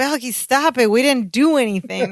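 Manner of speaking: mock exasperated delivery. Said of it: "They're doing over dramatic".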